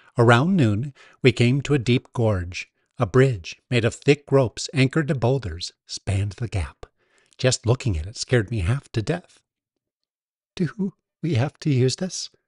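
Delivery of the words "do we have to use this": anxious, nervous, worried tone. Facing a rope bridge over a deep gorge, the narrator asks, nervous. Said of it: "I asked nervously".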